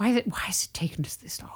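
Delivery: hushed, unvoiced whisper.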